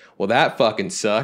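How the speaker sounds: acted-out, proclaiming, declaring tone. Retelling what the guy who hosted said after the movie: imitating someone saying it loudly. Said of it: "very loudly says".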